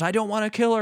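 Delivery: put-on yelling. Retelling a movie scene where a man yells at his grandma, retelling a yell. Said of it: "he's yelling at his grandma".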